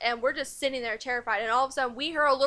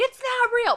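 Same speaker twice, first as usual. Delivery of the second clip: high-pitched, piercing yell; 11 semitones higher, 4 dB louder than usual. Retelling what a sister said about the Ouija board: imitating sister yelling. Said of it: "she yells at me like".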